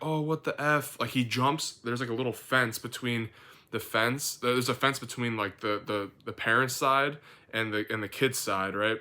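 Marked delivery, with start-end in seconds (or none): 0.0-1.0 put-on dad scream, high, small yelp. Retelling a playground fight, imitating a screaming dad: imitating a dad screaming.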